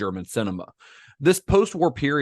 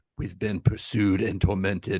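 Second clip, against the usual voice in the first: quietly intense impression, pitched much lower; 3 semitones lower than usual. Imagine Werner Herzog doing that instead, in an intense, quiet Werner Herzog voice. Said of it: "if Werner Herzog were doing that".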